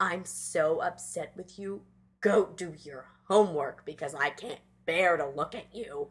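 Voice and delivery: mock disdainful, contemptuous voice. The speaker retells a father telling his son to do homework, mimicking his disdain. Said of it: "he says it with such disdain".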